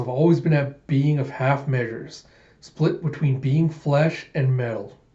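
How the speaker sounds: plain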